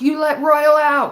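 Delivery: high, loud, drawn-out, accusing yell. Retelling a father yelling at the cops: imitating someone yelling. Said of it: "my dad yelling at the cops".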